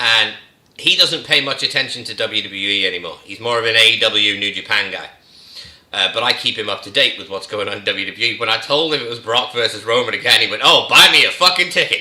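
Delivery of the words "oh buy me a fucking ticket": loud, utterly sarcastic, play-acted delivery. Retelling a brother's reaction to the news: imitating someone being very sarcastic. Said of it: "In the most sarcastic way humanly possible".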